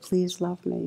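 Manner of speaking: whisper with deep yearning. Retelling a moment of self-compassion practice: retelling own whisper, deep yearning. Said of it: "I actually whispered it".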